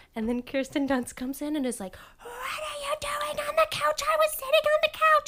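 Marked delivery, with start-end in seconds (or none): 2.2-5.3 mock very high-pitched, flipped-out, panicked outburst. Retelling a movie scene about a couch: imitating Kirsten Dunst flipping out. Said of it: "flips out".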